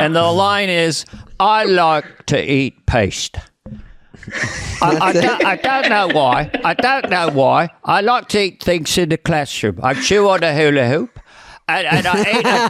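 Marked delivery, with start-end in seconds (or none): 1.4-11.2 nasal, put-on British voice. Showing a Michael Caine impression as a kindergartner, Michael Caine voice. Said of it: "I do Michael Caine in kindergarten".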